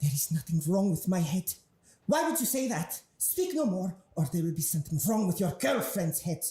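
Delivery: younger female character voice. Voicing a character who threatens someone's girlfriend: Lucia Mara voice. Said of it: "Lucia Mara's voice".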